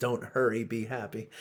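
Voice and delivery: ordinary talk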